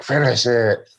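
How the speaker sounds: sinister, menacing movie-villain delivery. Describing a woman acting out the Green Goblin scene, mimicking Willem Dafoe. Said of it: "starts like mimicking Willem Dafoe. Like she does the voice".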